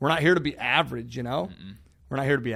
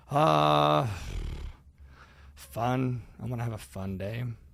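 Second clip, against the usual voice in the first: very slow, half-hearted, unenthusiastic, long drawn-out uh. Retelling a child's answer about what kind of day he wants: imitating an unenthusiastic answer. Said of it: "Sell me on it some more".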